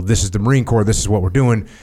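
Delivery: plain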